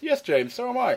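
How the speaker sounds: plummy upper-class voice. Imitating the other speaker as a commentator replying: posh imitation of Mike. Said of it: "Is that my voice?".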